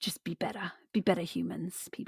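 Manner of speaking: smooth, suave, breathy near-whisper. Imitating how Captain says his sign-off: imitating Captain, suave. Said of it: "suave kind of".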